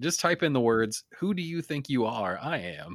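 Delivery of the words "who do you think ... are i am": ordinary delivery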